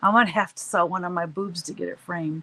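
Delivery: ordinary talk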